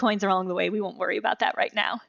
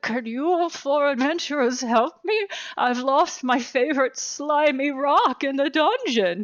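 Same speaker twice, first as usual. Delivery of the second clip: put-on haggard old peasant voice, pitched higher; 5 semitones higher than usual. Voicing a peasant who asks four adventurers in a tavern for help: haggard old peasant voice. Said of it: "this haggard old peasant comes up to you as you're drinking the tavern and says".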